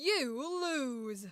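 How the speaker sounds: deep voice set down low in the body. Showing off a practiced voice-acting voice, the speaker uses a voice placed low. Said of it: "It's down here".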